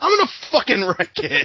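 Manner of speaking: mock all-out scream, high and swooping. Imitating a movie character screaming his line: Ralph screaming. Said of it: "in my head he just screamed".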